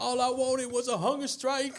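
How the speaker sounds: mock very high-pitched, shrill hollered yell. Retelling being dragged down the gallery: imitating own past yelling. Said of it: "I'm yelling".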